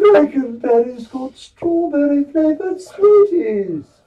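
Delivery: high, cheery cereal-commercial mascot character voice. Answering a request to do the cereal voice: Frankenberry voice. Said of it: "Do the Frankenberry voice".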